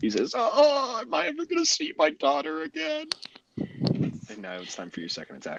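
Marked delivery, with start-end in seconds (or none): 0.4-3.1 very high, pained scream. Voicing a slashed enemy who screams: crying out in pain. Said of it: "he screams out in pain".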